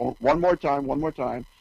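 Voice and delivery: ordinary talk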